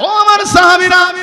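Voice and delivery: ringing, proclaiming delivery.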